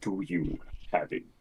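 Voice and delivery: gravelly villain voice. Narrating a roleplay scene as the players confront the villain alone: Darth Vader voice. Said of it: "raspy breath as he uh".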